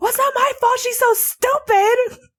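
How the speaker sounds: very high, shrill, put-on yelling. Retelling how mom yelled at the sister; imitating mom yelling. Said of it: "She's like yelling at my sister".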